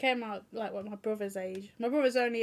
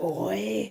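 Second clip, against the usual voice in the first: put-on low, deep, manly voice; 4 dB louder than usual. Redoing the word boy they had to voice, in a deep manly voice. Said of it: "I had to do boy in a really mm, manly, deep voice".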